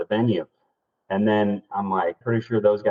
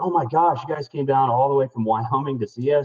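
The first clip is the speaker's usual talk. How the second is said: sarcastic tone, pitched higher; 5 semitones higher than usual. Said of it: "just again, kind of being sarcastic".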